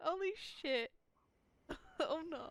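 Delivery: very high-pitched voice, crying through the words. Reacting to a goodbye to Makoto: crying while talking. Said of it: "I'm like crying".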